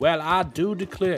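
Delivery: loud, high-pitched Southern American accent. Asked for a british accent, accidentally doing a southern accent instead. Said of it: "that's the southern accent".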